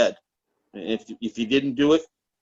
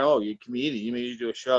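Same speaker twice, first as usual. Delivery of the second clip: ordinary talk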